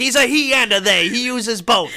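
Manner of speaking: shrill, loud, blustering, belted high. Acting out old men arguing over poker: Robert Loggia voice. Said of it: "And then Robert Loggia is like".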